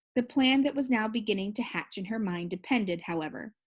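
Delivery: ordinary delivery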